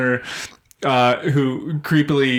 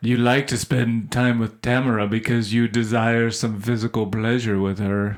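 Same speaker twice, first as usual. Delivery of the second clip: put-on creepy voice, lower; 4 semitones lower than usual. Quoting the angel character's line from the movie: imitating Muriel's creepy voice. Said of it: "he was just so creepy".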